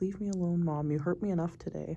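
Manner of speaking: speaking as a cat. Voicing the cat, who refuses new food from Mom: voicing the cat. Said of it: "He's like".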